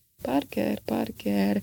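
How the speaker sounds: hesitant, unsure, searching mutter, half to oneself. A man in an elevator trying to remember something, muttered hesitantly. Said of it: "mormogta Scott tétován".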